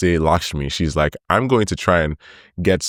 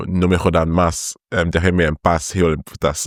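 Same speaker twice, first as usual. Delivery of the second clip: usual speaking voice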